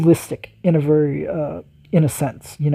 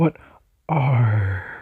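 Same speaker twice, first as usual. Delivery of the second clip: mock heavy, pirate-like r, lower pitch; 4 semitones lower than usual. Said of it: "The way he enunciated that R".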